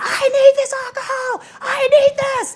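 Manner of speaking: mock very high sobbing, raging wail, crying scream. Retelling a man's hours of crying and screaming, imitating someone crying and screaming. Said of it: "kept crying and crying and screaming".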